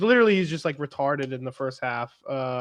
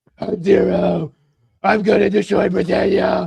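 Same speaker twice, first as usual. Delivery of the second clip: loud, gruff, growling voice. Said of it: "didn't do the Bale v-, n-, Dark Knight voice".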